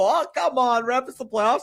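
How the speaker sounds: very high, protesting screaming. Retelling a coach on the bench giving the ref an earful: imitating someone screaming. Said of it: "He's screaming at the refs".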